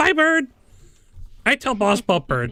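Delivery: very high, animated, swooping goblin creature voice. Voicing a goblin who spots someone at the window: goblin voice. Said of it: "You hear him go".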